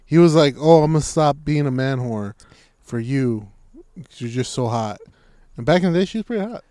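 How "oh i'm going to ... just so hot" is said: ordinary delivery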